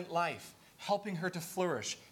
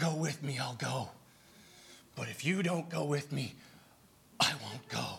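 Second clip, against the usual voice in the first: grand, low, dramatic movie-hero delivery; 4 semitones lower than usual. Retelling a man's words before going into battle, movie-style: mock-dramatic movie delivery. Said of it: "i'm going to say it more like a dramatic like you'd see in a movie".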